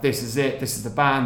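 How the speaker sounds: ordinary talk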